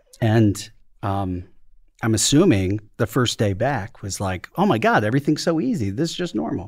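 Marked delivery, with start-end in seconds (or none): 4.6-6.7 very sarcastic, thick, high and sing-song throughout. Imagining the other speaker's first day back at work: very sarcastic. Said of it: "I'm being very sarcastic".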